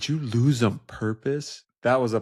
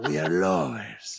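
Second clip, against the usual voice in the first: very low, deep, put-on Spanish accent; 7 semitones lower than usual.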